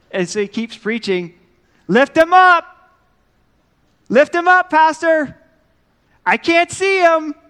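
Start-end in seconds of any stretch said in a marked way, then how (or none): 1.8-7.3 very loud, very high, shrill, drawn-out yell. Telling a church story, a lady in the back yells at the pastor: retelling a lady's yell. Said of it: "a lady in the back just yells out".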